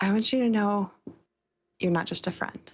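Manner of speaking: private, confiding aside tone. Voicing a character who looks over at Liam: under her breath. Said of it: "under her breath just say".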